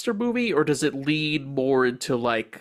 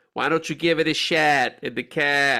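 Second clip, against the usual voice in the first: put-on Chicago cop accent, drifting into Boston. Joking about telling someone to give it a shat: Chicago cop voice. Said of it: "like a Chicago cop".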